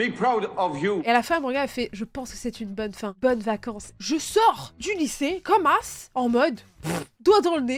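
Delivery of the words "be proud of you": put-on British accent, best effort. Retelling an exam answer given to the examiner: best British accent. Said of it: "avec meilleur accent british".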